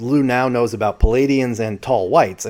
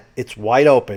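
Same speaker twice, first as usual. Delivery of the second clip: normal talking voice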